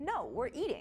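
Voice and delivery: mock rude, dismissive brush-off tone. Retelling a reply to a stranger who asked for a picture: imitating own rude reply. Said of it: "And I said it just like that. Like, it was, it was a rude way".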